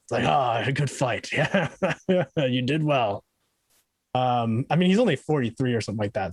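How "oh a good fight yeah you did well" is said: slow, gruff, kindly drawling grandpa voice. Showing how the character Champ sounds now: gruff friendly grandpa Champ voice. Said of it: "a little bit more gruff and kind of like the grandpa that's, like, very friendly".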